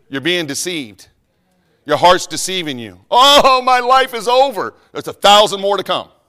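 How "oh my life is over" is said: put-on very slow, very drawn-out, high, heartbroken lovesick teen despair. Mocking heartbroken teenagers in a sermon: mock heartbroken teen. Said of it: "but I'm mocking you".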